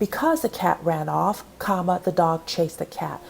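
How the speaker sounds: ordinary talk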